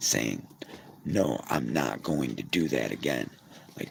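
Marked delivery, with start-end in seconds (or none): none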